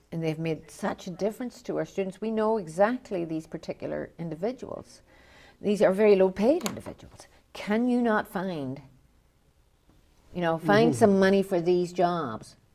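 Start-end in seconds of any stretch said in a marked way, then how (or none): none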